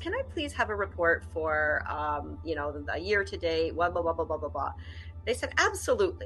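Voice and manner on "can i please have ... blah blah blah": normal talking voice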